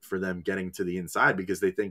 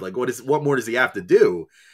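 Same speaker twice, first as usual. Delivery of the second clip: put-on scream, higher and louder; 4 semitones higher, 4 dB louder than usual. Retelling sitting in a seat at the game: imitating own screaming.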